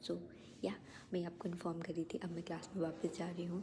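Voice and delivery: quiet whisper.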